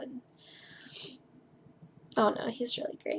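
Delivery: close to tears. Describing someone who cares about you, emotional, close to tears. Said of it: "I'm gonna start crying".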